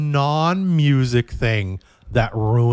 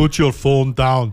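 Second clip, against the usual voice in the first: put-on Austrian accent in English; 3 dB louder than usual. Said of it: "I don't know why I'm doing an Austrian accent".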